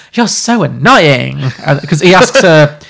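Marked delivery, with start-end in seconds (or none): 0.2-1.4 put-on voice like a young teenage girl. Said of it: "then she's like".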